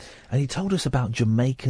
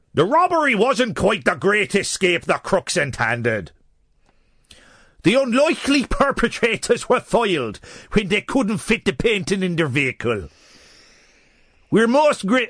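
bad put-on Irish accent, higher and louder; 7 semitones higher, 6 dB louder than usual. Reading out a news quote from a hotel manager: bad Irish accent. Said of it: "that accent was quite criminal".

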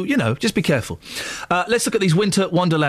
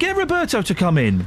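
ordinary delivery

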